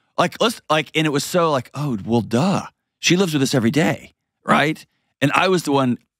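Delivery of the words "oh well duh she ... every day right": ordinary talk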